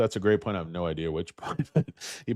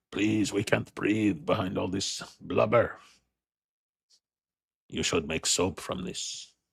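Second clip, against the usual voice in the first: shady put-on French accent, crook voice. Voicing talking lower abs pleading from under fat: French criminal voice. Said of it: "My lower abs sound like a French, uh, criminal".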